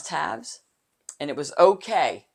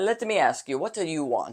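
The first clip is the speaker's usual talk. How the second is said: put-on Italian accent; 3 dB quieter than usual. Quoting her late husband, who was Italian: imitating his Italian accent. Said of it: "that's what he sounded like".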